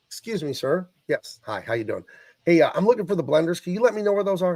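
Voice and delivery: friendly, polite, respectful, courteous tone. Showing how to ask a store worker for help, addressing him as sir; polite courteous request. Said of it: "Just like that, like he's a human".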